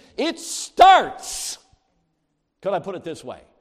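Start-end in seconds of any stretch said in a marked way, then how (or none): 0.2-1.6 very high, loud emphatic delivery. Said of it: "I don't want you to miss this".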